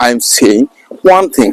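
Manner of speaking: normal talking voice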